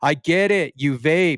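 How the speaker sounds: put-on screamed character voice. Quoting a game character's voice line after a fire kill: imitating Rafa screaming. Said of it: "he just screams out".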